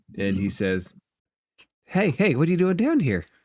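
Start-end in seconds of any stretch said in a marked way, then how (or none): 1.8-3.2 high, squeaky little creature chatter. Narrator voicing a character who greets the listener entering the room: squeaky voice. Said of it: "he squeaks a little bit".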